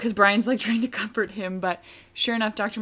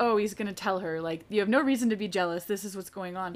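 ordinary talk

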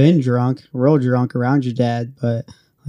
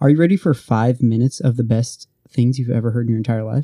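ordinary delivery

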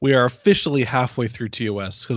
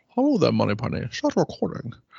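bad put-on Scottish movie-spy voice, quieter; 4 dB quieter than usual. Starting the podcast recording in a bad Sean Connery impression. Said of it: "a bad Sean Connery impression".

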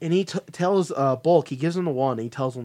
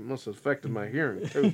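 imitated aside out the side of the mouth, quieter; 6 dB quieter than usual. Retelling what a man said, retelling a side-of-mouth remark. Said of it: "through the side of his mouth".

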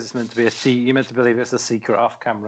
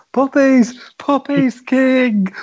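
put-on screaming commentator voice, higher; 14 semitones higher, 3 dB louder than usual. Retelling a commentator's outburst, imitating Michael Cole screaming. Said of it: "Michael Cole just starts screaming at the top of his voice".

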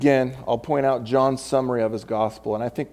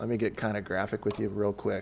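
usual speaking voice

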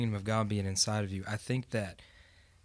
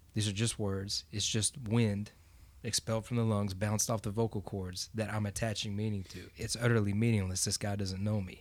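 usual speaking voice

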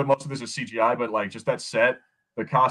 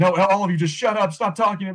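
play-acted, loud, high, frantic freaking-out outburst; 8 semitones higher, 5 dB louder than usual. Retelling a scene where a character is told to put on the suit: imitating a character freaking out. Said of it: "freaking out".

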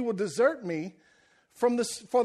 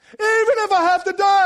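booming, bold, shrill, very high and loud; 9 semitones higher, 10 dB louder than usual. Retelling a bold declaration in a Gladiator-style setting: bold declaring Peter impression. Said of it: "He declares it in front of all".

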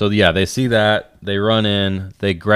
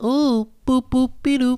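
put-on cartoon girl voice, higher. Arguing that a cartoon had no high voice, imitating Betty Boop. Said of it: "She just went".

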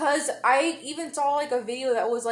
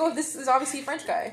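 usual speaking voice

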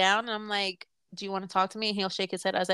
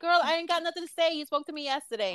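pitched-up voice; 7 semitones higher than usual. Retelling an answer to mom about calling: retelling own past reply. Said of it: "But I'm like".

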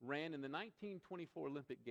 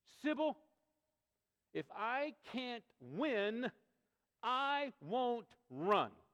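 loud, high, slow, drawn-out cry of anger; 9 semitones higher, 8 dB louder than usual. Telling a story, the speaker quotes a runner who lost, speaking to her: imitating an angry outburst. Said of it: "in a pitch of anger".

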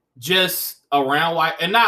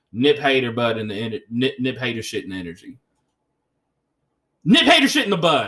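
worked-up, heated rant, rising in intensity; 2 semitones lower than usual. The speaker is venting mid-rant, sounding worked up. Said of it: "I'm very worked up right now".

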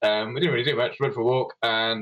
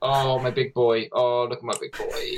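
slow, creepy, unsettling doting coo. Repeating the big boy joke from earlier, mock creepy voice. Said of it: "I did it in that creepy sort of way".

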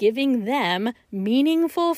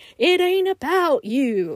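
drawn-out, pitched-up shout; 6 semitones higher than usual. Telling judges it is not about them, imitating Dr. Phil shouting. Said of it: "Hear Doctor Phil's voice shouting".

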